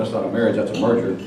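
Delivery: ordinary talk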